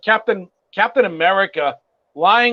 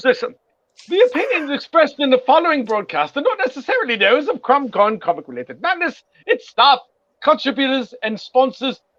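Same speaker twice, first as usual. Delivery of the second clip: fake British accent throughout, pitched up; 5 semitones higher than usual. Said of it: "my British accent".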